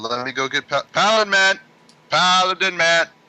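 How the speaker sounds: loud high yell. A character goes to fetch Paladin Man, yelling at a door. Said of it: "you're yelling at a door".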